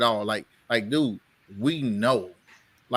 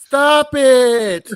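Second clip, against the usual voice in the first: shrill, very loud put-on voice, "it" stretched; 12 dB louder than usual. Telling someone to stop it, in a Rob Parker voice. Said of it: "in my Rob Parker voice".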